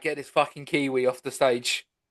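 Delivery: ordinary talk, nothing marked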